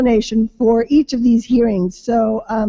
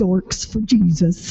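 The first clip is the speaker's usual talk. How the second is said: low, sly, private muttered aside under the breath; 4 semitones lower than usual. Introducing a table of people, joking aside: mock muttering under breath. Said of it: "But quietly under my breath".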